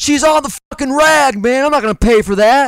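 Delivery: play-acted heated, angry shout. Retelling what an older man yelled at the speaker, retelling a yell. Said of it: "And then he yells".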